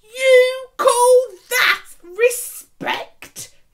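raging, very loud, shrill, very high, drawn-out yell. A man challenges another man's claim about the children, shouting in rage. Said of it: "shouted Ebenezer".

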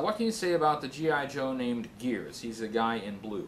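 normal talking voice

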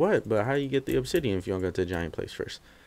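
ordinary delivery

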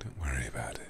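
gentle, soothing ASMR-style whisper.

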